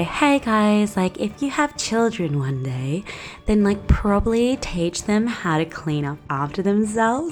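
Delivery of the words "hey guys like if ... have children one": plain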